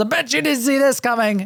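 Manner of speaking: high-pitched yell. Describing a ninja leaping from the shadows to stab: imitating Naoe's yell. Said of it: "she jumps out of the shadows and she yells".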